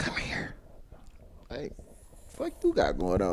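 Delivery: put-on whisper. Retelling what a customer said to get attention: imitating someone whispering. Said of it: "she was whispering".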